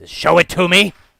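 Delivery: very loud, high, devilish guard voice. Voicing a fiendish guard who stops the players at the gate: voicing a fiendish guard. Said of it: "He says".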